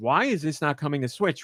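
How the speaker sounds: plain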